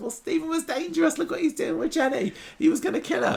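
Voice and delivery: very high put-on defensive voice. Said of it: "And he says".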